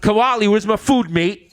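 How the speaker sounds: bad put-on British accent. Joking about being in the show's next season, terrible british accent. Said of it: "with like terrible British accents".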